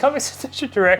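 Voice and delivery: high-pitched, weepy, tearful crying delivery. Reading the sponsor name on cue for a co-host: crying voice. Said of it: "Why are you crying?".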